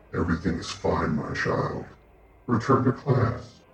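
one voice doubled, two at once. Game narrator voicing a voice the players hear in their minds: quiet voice of two at once. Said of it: "you see one of the Elder Brain's tentacles. / but it's like two voices at once. ... but you all hear a voice in your mind".

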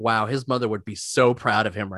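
plain

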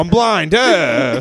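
high, mocking clueless voice. Retelling the prankster pretending to be blind: mocking imitation of the prankster. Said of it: "He's all".

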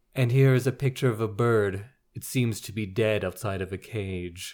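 deadpan audiobook narrator voice. Recalling the audiobook narrator reading a caption, deadpan John Malkovich impression. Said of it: "very deadpan".

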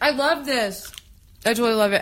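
speaking with mouth full of food. Tasting a tempeh dish, talking with mouth full. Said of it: "I have my mouth full".

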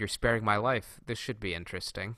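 ordinary talk, nothing marked

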